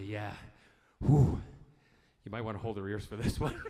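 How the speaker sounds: fast, husky put-on voice. Retelling getting out of the car, doing his usual husky voice act. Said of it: "my kind of husky voice acting".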